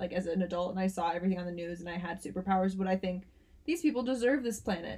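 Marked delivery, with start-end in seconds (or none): none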